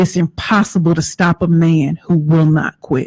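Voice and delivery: ordinary talk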